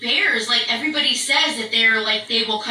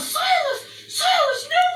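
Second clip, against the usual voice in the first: terrified screaming. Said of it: "And I'm screaming".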